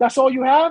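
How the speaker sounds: mock snide, sarcastic jabbing tone. Retelling a player's remark at a gambling table: imitating a sarcastic remark. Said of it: "the guy sarcastically tells him".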